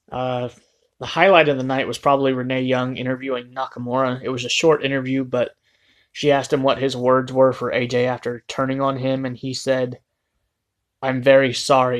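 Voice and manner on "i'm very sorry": sarcastic, insincere delivery, not meant. Retelling a heel's reply in an interview, imitating a sarcastic tone. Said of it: "he said it as a sarcastic tone".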